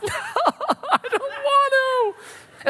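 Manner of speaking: very high, very slow, drawn-out sobbing. Acting out Jeremiah when he is called: imitating Jeremiah crying. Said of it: "He cries".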